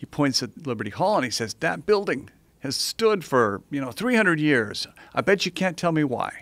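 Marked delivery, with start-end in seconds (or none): 1.5-6.4 put-on Philadelphia accent throughout. Retelling what a driver said pointing at a building: imitating a Philly accent. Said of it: "this great guy with a Philly accent".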